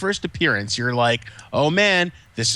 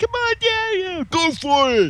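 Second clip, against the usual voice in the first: put-on very high, slow, drawn-out little-kid cheering. Imitating a kid cheering his dad on in a fight: imitating a kid cheering. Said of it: "his kid going like".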